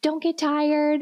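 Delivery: high cheering voice. Retelling watching the Olympics: imitating own screaming at the TV. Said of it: "screaming at the T V".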